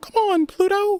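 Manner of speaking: tiny high-pitched cartoon mouse voice. Doing a Mickey Mouse voice for another speaker: Mickey Mouse voice. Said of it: "the first time you did Mickey Mouse".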